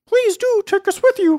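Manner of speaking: very high, birdlike pheasant voice. Reading the Momotaro story aloud, giving the pheasant's line in a pheasant voice. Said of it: "said the pheasant".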